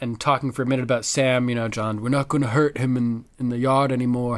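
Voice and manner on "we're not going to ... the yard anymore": earnest delivery in a character voice. Acting out Jon talking about Sam being hurt in the yard, do a good Jon Snow voice. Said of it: "you do a good John voice".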